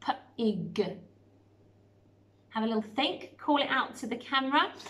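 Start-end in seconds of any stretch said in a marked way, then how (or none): 0.0-1.0 robot voice sounding out each segment. Showing children how to sound out a word: robot talk, sounding out. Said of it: "What word does that sound like?".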